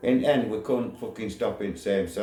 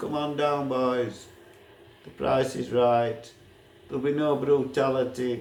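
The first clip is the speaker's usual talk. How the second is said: mock calling out; 6 semitones higher than usual. Retelling how someone shouted up at a man on a roof, retelling a shout. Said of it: "Scrooge shouting at him".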